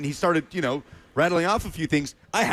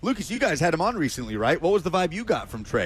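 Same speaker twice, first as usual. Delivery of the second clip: ordinary talk, nothing marked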